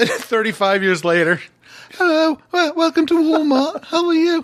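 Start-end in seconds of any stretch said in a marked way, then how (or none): 1.9-4.4 put-on girlish voice, much higher pitch. Acting out a joke about a choirboy's voice years later, high girlish voice. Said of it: "You sound like the girl in my Christmas album".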